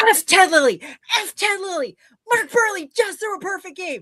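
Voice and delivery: put-on very high, wild, excited shrieking. Retelling phoning a future husband after a perfect game, retelling a scream. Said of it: "I just start cre- screaming".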